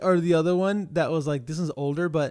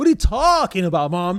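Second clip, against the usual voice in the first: panicked, louder delivery; 3 semitones higher, 6 dB louder than usual. Retelling begging mom not to send him away: imitating own past panic. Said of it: "I start panicking".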